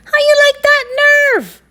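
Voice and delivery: very high, squeaky, loud shriek. Narrator reading Baby Mongoose's line in a story, highest, squeakiest shriek. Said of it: "Shrieked Baby Mongoose in his highest, squeakiest voice".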